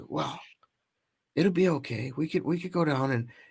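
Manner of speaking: hushed, barely audible half-whisper. Retelling what a child said while turning the camera around: imitating Dominic half-whispering. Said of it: "as he's whispering".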